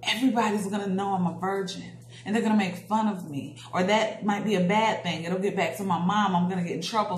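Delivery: ordinary talk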